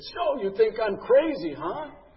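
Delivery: loud, piercing, high, slow drill-instructor bark. Retell being called into the drill instructor's office, in Staff Sergeant Mackey's loud, piercing voice. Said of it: "had this really loud, piercing voice".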